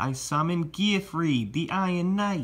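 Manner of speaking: put-on Brooklyn accent. Summoning a card during a card game: Joey's Brooklyn accent. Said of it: "I'll say it how Joey says it with the Brooklyn accent".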